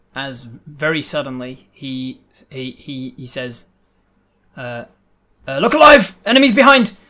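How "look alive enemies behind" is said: sudden alarmed shout, very high, shrill and loud. Running the game, the speaker voices a sudden moment for the players: Joey in a panic. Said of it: "there is a moment of panic uh, from Joey's voice".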